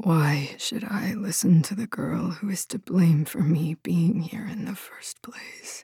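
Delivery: hoarse, hushed, rasping whisper. Narrating a story, voicing a captive figure answering the girl who came to free it: rasping whisper. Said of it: "a rasping voice whispered".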